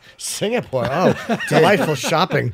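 slow, drawn-out put-on voice. Redoing own earlier line the way an aunt would say it: imitating an aunt. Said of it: "like my fucking aunt".

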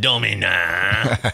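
"Domina" stressed, slow, drawn out, with a sneer.

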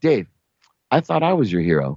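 play-acted, very calm, unruffled, composed, even tone. Retelling what Lee said after an embarrassing moment: imitating Lee speaking very calmly. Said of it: "Lee says very calmly".

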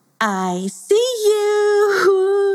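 very high giggling laugh, drawn-out "you". Reading a story aloud, Badmoodia reaches the third dark basin: laughing. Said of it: "she laughed".

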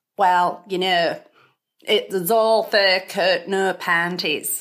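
slow, badly done regional UK accent.

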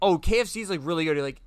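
ordinary talk

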